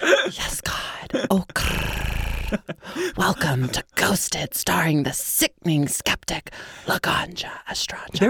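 eerie, spooky, whispered ghost voice. Introducing the show in a spooky ghost voice. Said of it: "I should do that in my ghost voice".

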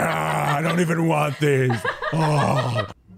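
mock very slow, high, drawn-out words through full mouth. Picturing Michael Fleiss stuffing cannolis in his face, imitating Michael Fleiss with mouth full. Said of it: "just stuffing cannolis in his face".

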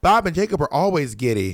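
normal talking voice

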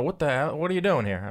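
furious, confrontational voice like an angry promoter. Asking whether a promoter ever confronted the reporter: Bob Arum impression. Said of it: "my best Bob Arum impression".

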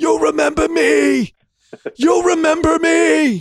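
put-on, very high, slow, stretched-out, drawn-out scream. Retelling a movie scene where the stepfather screams from the porch: imitating Robert De Niro screaming. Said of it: "he stands on the porch and he screams".

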